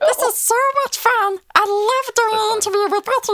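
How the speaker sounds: high helium chipmunk voice. Showing the interviewers a voice in character mode: chipmunk on helium voice. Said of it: "say I'm doing a chipmunk voice".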